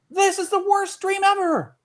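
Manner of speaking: very high, piercing, shrill scream. Telling a story, voicing a mole guard that suddenly wakes up: high-pitched scream. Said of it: "it screams in a high pitched voice".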